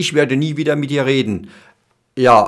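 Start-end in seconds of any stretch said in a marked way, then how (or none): none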